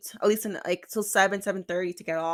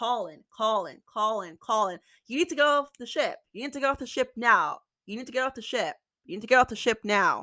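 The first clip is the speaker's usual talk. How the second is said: urgent, insistent shouting, repeated over and over; 2 semitones higher than usual. Retelling how cruise staff yelled on the room phone: imitating staff yelling. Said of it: "Literally yelling in the phone".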